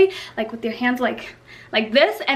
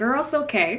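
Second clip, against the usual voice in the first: obviously annoyed, irritated tone; 2 semitones lower, 5 dB quieter than usual. Retelling a reply to an apologising stylist: imitating her own annoyed tone. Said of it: "you could tell I was pissed".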